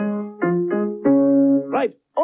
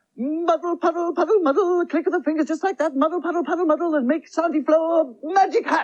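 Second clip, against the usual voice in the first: rushed, hurried, much higher voice; 14 semitones higher, 3 dB quieter than usual. A magician hurries through the magic rhyme before the auntie returns: in a rush. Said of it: "[In A Rush]".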